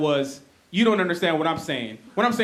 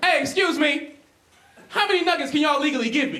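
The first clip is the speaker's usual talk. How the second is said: loud, high-pitched put-on shout; 9 semitones higher than usual. Retelling a friend yelling an order into a drive-thru window: imitating a friend yelling. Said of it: "He yells across my body into the window".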